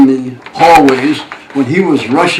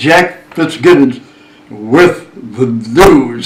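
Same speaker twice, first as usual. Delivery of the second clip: deep, held, dragged-out newsman announcer voice; 4 semitones lower than usual. Recalling how a newsman signed on at six o'clock, in a deep, dragged-out Jack Fitzgibbons voice. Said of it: "he'd hold it and drag it out".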